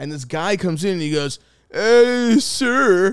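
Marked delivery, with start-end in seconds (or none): 1.7-3.1 put-on odd old-man voice, very high, shrill, very loud. Retelling a movie theater worker greeting the speaker: imitating a weird old man's voice. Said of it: "weird fucking voice like that".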